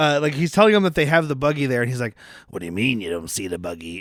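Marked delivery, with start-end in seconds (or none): 2.5-4.0 very low, deep, hushed, soft villain voice. Imitating the biker dub actor telling them about the buggy: Cobra Commander-like villain voice. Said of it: "That is a little more Cobra Commander".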